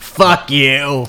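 put-on horror doll voice. Being introduced for the channel's Child's Play series, answering with a Chucky impression. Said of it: "That was a good Chucky impression".

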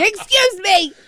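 very high, entitled, demanding tone. Teasing about not complaining at the Hy-Vee, go full Karen demanding customer. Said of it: "go full Karen at the Hy-Vee and just be like".

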